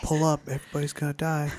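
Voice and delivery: put-on urgent whisper. Imitating a cockpit alarm that is too soft to hear: whispered warning. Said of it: "It's like whispering it".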